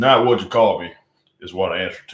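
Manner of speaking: Western accent. Reading a viewer's quote aloud in a Western accent. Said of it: "a Western accent".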